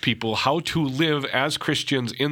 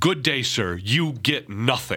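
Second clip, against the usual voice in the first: irate, angry, dismissive and final tone. Retelling a movie scene where Willy Wonka refuses the prize: imitating an angry Willy Wonka. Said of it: "Willy Wonka turns around angry and he says".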